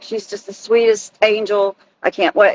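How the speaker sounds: ordinary talk, nothing marked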